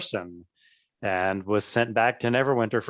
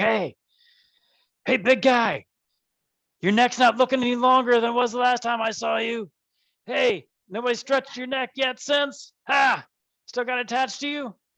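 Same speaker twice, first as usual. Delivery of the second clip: very high-pitched, mocking, jeering voice; 13 semitones higher than usual. Voicing someone calling down from a window at a player: mocking taunt. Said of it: "you hear a voice coming from a window above you".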